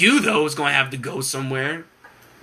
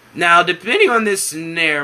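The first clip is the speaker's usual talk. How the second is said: voice cracking and breaking mid-phrase; 3 semitones higher than usual. Speaker explaining how to label tracks, voice cracking. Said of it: "my voice just cracked".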